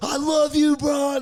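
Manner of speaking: acted, high-pitched, drawn-out fan scream. Recalling one guy in the crowd calling out to LeBron, retelling a fan's scream. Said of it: "You heard one guy scream out like".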